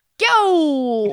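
put-on Brooklyn accent. Retelling a drunk impressions game, asked to do brooklyn accent. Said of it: "Do a Brooklyn accent".

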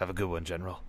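muttered under breath. Retelling a scene where a commander sinks back into his chair, said under his breath. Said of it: "under his breath".

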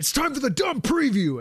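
acted, full-throated, belted scream at very high pitch. A fan describing an anime episode preview, imitating Bakugo screaming. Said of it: "And he's screaming like this".

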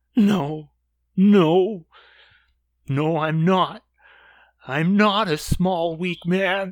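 tearful crying voice, trembling and quivering. Acting out a man heard talking to someone unseen, imitating him crying. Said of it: "he's crying and his voice is quivering".

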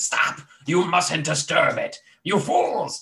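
drawn-out cry, slow and deliberate. Voicing a creature that warns the party off disturbing it: yelling out. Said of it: "you can hear something yell out in the draconic tongue".

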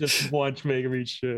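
drawn-out, mock gloating, heckling voice.

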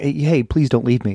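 imitated begging plea. Retelling an episode scene where a child begs: imitating a begging plea. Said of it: "he's begging".

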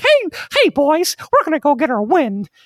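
very high, loud, swooping cartoonish put-on voice. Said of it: "talk as, like, Christopher Walken or Mickey Mouse".

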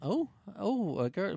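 very slow, very drawn-out, bashful, shy surprise. Describing how a film character should have reacted: imitating a bashful reaction. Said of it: "a wee bit more kinda".

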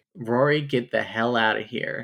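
ordinary delivery

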